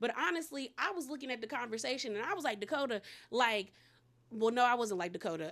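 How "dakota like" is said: usual speaking voice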